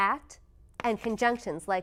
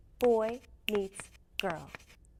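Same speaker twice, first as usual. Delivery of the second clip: put-on equal stress on boy, meets, girl. Showing learners the sentence rhythm: stress on BOY, MEETS, GIRL. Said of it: "All three words get a beat".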